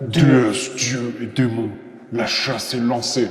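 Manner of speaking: demonic, proclaiming announcer-style voice. Narrator describing a darkening sky as a voice comes from Chance: Chance's demonic voice. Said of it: "tu entends dans une voix démoniaque".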